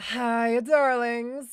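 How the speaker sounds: mocking tone, high-pitched. Trying to copy another streamer's stream greeting, imitating her greeting. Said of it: "I sound like I'm mocking her".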